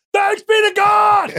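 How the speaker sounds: very loud, very high, slow, drawn-out scream. Imagining a response in church, demonstrating a scream.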